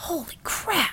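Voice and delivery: loud, breathy stage whisper meant to carry. Reading a story aloud, a character's amazed line: stage whisper. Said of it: "Hensel said in a stage whisper".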